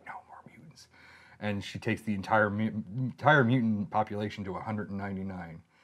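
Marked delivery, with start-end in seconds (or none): 0.1-0.9 very quiet, hushed, breathy whisper. Retelling a comic character's line: imitating a whisper. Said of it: "she whispers, she's like".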